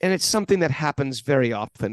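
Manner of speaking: put-on German-accented speech. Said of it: "in that German accent".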